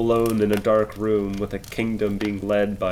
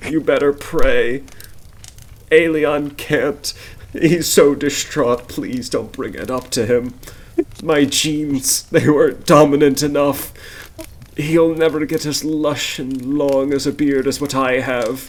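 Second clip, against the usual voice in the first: put-on old man voice, high and loud, close to sobbing; 5 semitones higher, 6 dB louder than usual. Voicing an old man who answers you with tears in his eyes; tearful old man. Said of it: "leaving the weeping old man, / I've been here longer than anyone else alive. ... leaving the weeping old man".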